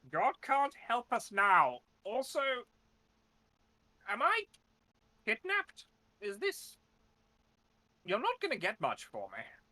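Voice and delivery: harsh, cranky, ornery voice, loud and very high. Game narrator voicing someone speaking out of the darkness, stark, ornery voice. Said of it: "this very stark, ornly voice come out of the darkness".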